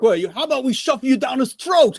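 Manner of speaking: put-on New York accent with a very high pitch. Quoting a movie character who sounds like he's from new york: imitating a new york accent. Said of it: "then he sounds like he's from New York".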